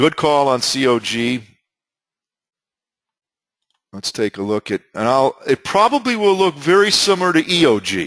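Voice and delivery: too loud, high-pitched talking. Going over stock charts, talking loudly. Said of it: "Excuse me for talking so loud".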